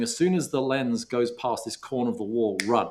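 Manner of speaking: plain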